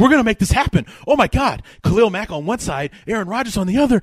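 put-on, high, frantic, giddy freaking-out excitement. Retelling a fan's reaction to trade talks: imitating someone freaking out. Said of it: "He freaks out".

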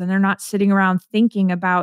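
ordinary talk, nothing marked

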